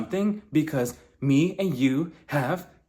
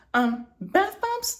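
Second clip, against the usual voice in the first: mock-confused tone, much higher pitch. Retelling a confrontation, acting out Whitney's reply, imitating Whitney confused. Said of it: "Whitney was genuinely confused".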